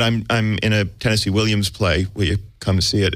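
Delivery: plain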